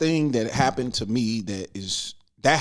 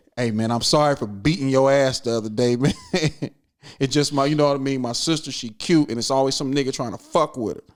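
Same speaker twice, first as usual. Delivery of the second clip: ordinary delivery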